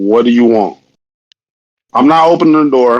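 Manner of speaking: hard, unbending, very stern, severe tone. Imagining answering someone at your door, speak in a very stern voice. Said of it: "I'm going to speak in a very stern voice".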